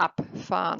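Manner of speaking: abfahren stressed on the ab syllable. Explaining German separable verbs: stress on ab in abfahren. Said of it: "So I have my emphasis on ab".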